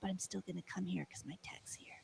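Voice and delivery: mock muttered aside. Retelling what an annoyed customer said to the manager: imitating a mumble under breath. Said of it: "mumbled under his breath".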